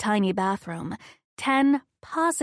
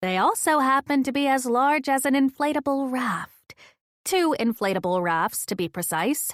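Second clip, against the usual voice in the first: ordinary delivery, nothing marked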